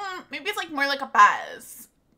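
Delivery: put-on high, slow valley girl voice. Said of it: "Do I really sound like a valley girl in your head?".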